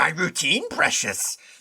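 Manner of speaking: bad, creepy creature voice, not quite landing. Describing a man who acts like an American Psycho Gollum: bad Gollum impression. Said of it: "I can't do a good Gollum".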